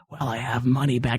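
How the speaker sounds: hushed whispered voice. Retelling how they answered when told their card was declined, retelling own whisper. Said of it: "I don't know why I whispered back".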